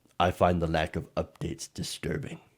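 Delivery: breathy, breathed-out dark villain voice. Rereading a quoted line from a donor's email: Darth Vader voice. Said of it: "I almost said that in a Darth Vader voice".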